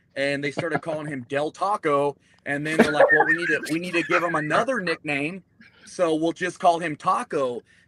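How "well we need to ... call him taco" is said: plain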